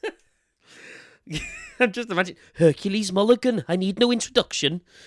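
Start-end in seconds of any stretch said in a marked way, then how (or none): 2.6-4.8 put-on high, loud, terrible Welsh accent. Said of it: "the terrible Welsh accent".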